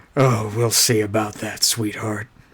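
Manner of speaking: gruff, low, rough put-on Southern American male accent. Answering a foe who calls herself the Archangel of War: rough Southern guy voice. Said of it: "Why is he like a rough Southern guy?".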